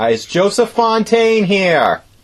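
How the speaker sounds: shouting. Calling out to a spirit during a ghost contact attempt, yelling. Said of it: "Not to yell".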